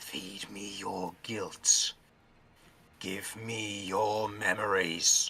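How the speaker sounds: very slow, dragged-out creature voice. Voicing the arm creature as its hand reaches toward a face: arm creature voice. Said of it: "its hand reaches towards your face and you hear it say".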